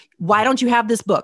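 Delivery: yelling. Retelling scolding someone over not owning a book: imitating own past yelling. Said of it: "I'm yelling at her".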